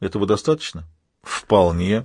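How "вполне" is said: snorting, much lower pitch. Sheridan replies to Thomas, who says he is a priest, with a snort. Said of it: "фыркнув".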